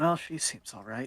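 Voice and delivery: muttered aside to self. A character comments to himself about Laura: muttered under his breath. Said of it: "He sort of says under his breath to himself".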